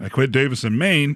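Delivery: ordinary delivery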